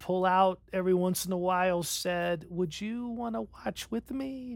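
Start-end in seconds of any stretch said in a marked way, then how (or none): 2.5-4.6 sweet, gentle, soft little voice. Retelling how Raylene asked the speaker to watch with her, imitating Raylene's sweet voice. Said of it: "in that little sweet voice that wives".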